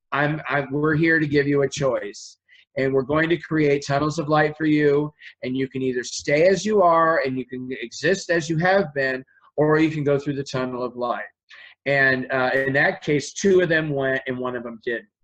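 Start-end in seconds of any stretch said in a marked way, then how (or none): none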